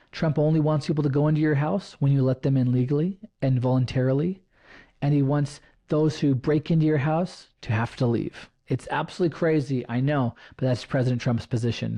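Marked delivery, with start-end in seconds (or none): none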